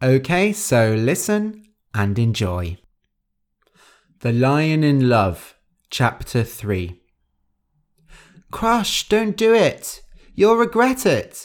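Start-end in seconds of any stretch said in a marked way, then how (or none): 8.5-11.4 very high-pitched crying out. Reading a fable aloud, the mouse calls to the lion, crying out. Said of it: "Gentle cried".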